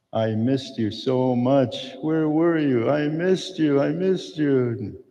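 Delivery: high, slow sobbing, crying throughout the words. Retelling a reunion hug, quoting her words: imitating someone crying while talking. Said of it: "just crying and crying".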